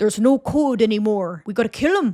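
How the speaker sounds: imitated Canadian accent. Recapping a TV season, quoting the villain grandpa: very Canadian-sounding accent. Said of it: "he says it's so Canadian where he's like".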